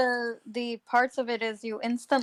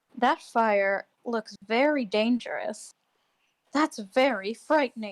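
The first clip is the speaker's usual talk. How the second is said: voiced stage whisper, like a secret aside. Acting out a woman half-whispering to someone about a fire, half-whispering. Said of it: "She whispers when she does it".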